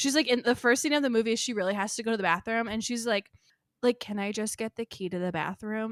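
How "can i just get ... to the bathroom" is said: put-on lifeless, completely bored, zero urgency. Imitating an actress in a film's first scene: imitating Sydney Sweeney sounding bored. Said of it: "she just sounds, uh, completely bored".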